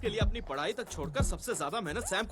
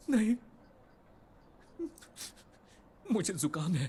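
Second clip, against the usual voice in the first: crying, tearful voice. Asked whether they're crying over not getting on the committee, answering while crying. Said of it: "तुम रो रहे हो क्या?".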